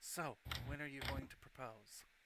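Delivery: leaning-in stage whisper. A lord leans down toward a character as she leaves, whispering. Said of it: "lean down and whisper".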